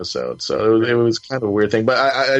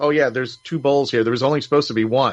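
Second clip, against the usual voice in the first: plain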